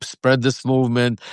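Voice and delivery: ordinary talk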